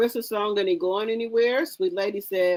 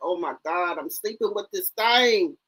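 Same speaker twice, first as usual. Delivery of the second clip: put-on disgusted exclamation, full of revulsion. Voicing a man's thoughts while he looks at her: imitating disgusted man. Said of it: "looking at her with disgust, like".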